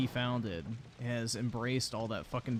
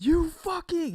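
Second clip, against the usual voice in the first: very high, loud, top-of-the-lungs screaming; 10 dB louder than usual. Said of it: "at the top of his fucking lungs, just screams like".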